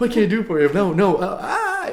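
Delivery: put-on very loud, high, swooping panicked fluster. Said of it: "even higher".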